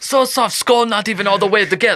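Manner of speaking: very high-pitched, laid-on, put-on Russian accent. Act out a father who fears spoiling his children, in a put-on Russian accent. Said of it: "You were Russian there".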